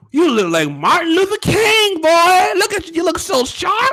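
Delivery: put-on high elderly grandmother voice. Acting out a grandma praising how someone looks: imitating a grandma. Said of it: "Or you go to your grandma's house".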